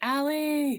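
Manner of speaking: high, loud yelled name.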